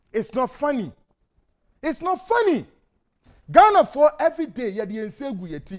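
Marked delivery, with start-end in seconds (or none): 0.1-2.6 high, rising, fervent, pleading orator's cry. Warning every Ghanaian about an explosive report: screaming. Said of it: "you will know why I am screaming".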